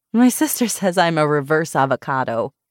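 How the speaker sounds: plain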